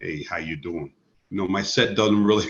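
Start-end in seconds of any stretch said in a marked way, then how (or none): 0.0-0.9 very quiet, deep, hushed baritone. Showing the voice that makes his stage sets worse, in a deep baritone voice. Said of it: "when I go to my baritone voice".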